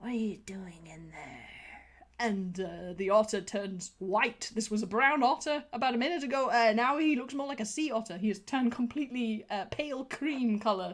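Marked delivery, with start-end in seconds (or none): 0.0-1.4 put-on menacing tone, low, hushed and sinister. Telling a story, voicing someone calling through the door, in a mock-sinister voice. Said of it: "a rather awfully sinister voice".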